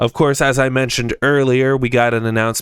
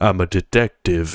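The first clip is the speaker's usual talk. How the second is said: deep manly put-on voice, slower; 5 semitones lower than usual. Comparing the movie to the games, the speaker does a deep Detective Pikachu voice. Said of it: "he has this like deep".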